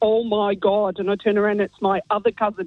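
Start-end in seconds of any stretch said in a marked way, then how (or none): 0.0-1.0 thick put-on Derry accent, much slower. Acting out the cousin you heard behind you in the bathroom, in a really thick Derry accent. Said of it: "in a really thick, Derry accent".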